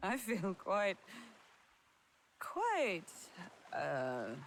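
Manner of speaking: put-on tipsy, slurred-sounding voice. After tasting a strange juicy fruit, sounding drunk. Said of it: "Don't tell me you're drunk".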